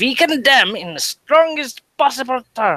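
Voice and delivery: very high, robotic, vehement, drawn-out voice. Reading a quoted condemnation aloud as a joke: mock Nazi voice. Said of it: "like a Nazi".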